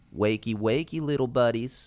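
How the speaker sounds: high, sneering, sadistic voice, dripping with delight. Narrator voicing a character taunting two frightened people at night, sneering. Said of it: "he sneered".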